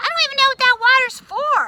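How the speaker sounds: rude, not-so-nice tone. Explaining what tone means by contrasting two ways of asking, use a not-so-nice tone. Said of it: "Or saying".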